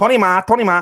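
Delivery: imitated Chinese accent. Explaining a game strategy of blending in with a group, Chinese accent. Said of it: "that's where the Chinese accent comes into play".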